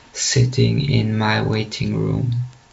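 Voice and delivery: ordinary talk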